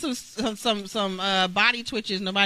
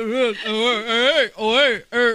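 put-on mumbling boxer voice, louder; 2 semitones higher, 5 dB louder than usual. Trying a Rocky Balboa voice and failing: Rocky Balboa voice. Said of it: "I definitely can't do the Rocky Balboa".

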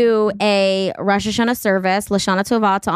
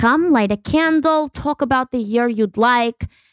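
put-on heavy Yiddish accent throughout; 4 semitones higher than usual. Quoting a rabbi's wife greeting arrivals, in a thick Yiddish accent. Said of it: "in a thick Yiddish accent".

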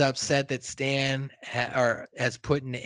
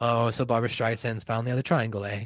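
mock casual, unbothered, offhand nonchalant tone; 3 semitones lower than usual. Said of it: "all like nonchalantly".

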